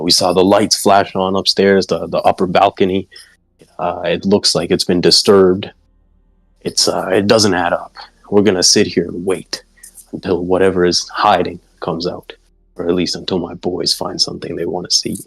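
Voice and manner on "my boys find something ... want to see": ordinary talk, nothing marked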